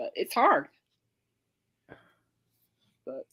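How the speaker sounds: teary voice, on the verge of tears. Talking about accepting things you can't control, teary-eyed. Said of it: "I'm getting teary-eyed".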